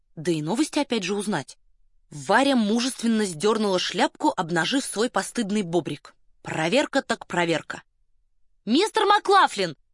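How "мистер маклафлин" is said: clear, ringing shout, very high. Narrator reads a woman hailing a correspondent from her carriage, ringing call. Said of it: "звонко крикнула она".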